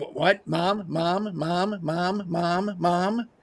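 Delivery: put-on very slow, drawn-out two-year-old child voice. Mocking a debate candidate who interrupts: imitating a two-year-old. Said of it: "interrupt you like a two-year-old".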